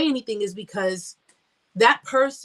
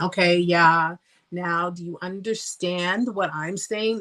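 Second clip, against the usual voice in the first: slow, patronizing, condescending talking-down; 3 semitones lower than usual. Showing how people talk to you like a 2-year-old: mock condescending tone. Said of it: "Like that condescending tone".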